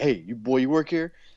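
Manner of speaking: mock berating yell. Retelling a backstage scene with a young worker, imitating Undertaker yelling. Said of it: "he yells at this little child".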